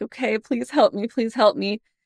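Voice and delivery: tearful, sobbing, pleading voice. Retelling a moment of conviction while praying: retelling own sobbing plea. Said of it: "I'm, I'm sobbing".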